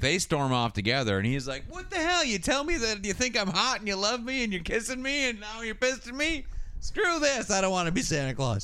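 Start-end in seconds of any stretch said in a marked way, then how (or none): 1.7-8.7 mock yelling, very high, shrill and outraged. Recounting what a man yelled as he stormed off, retelling a yell. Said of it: "that's what he's yelling".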